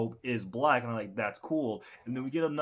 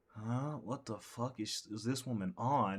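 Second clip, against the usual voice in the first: put-on disgusted voice, quieter; 7 dB quieter than usual. Acting out Sukuna's reaction to a woman leaning on him: disgusted Sukuna voice. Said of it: "he just, like, looks disgusted".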